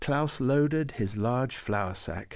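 plain

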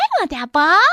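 very high, loud, shrill cartoon character voice. Describing how children mimic the characters' voices when reading, very high Piggy voice. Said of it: "Piggy's very high".

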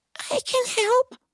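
put-on teeny, squeaky little voice, pitched very high. Narrator reads a story, a tiny ant offering help, tiny little voice. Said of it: "this tiny little voice that said".

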